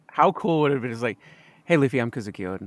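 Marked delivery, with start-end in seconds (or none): 1.6-2.7 very quiet, low, hushed, understated delivery. Imagining Kozuki Oden greeting Luffy, very quiet. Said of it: "Just like very quietly".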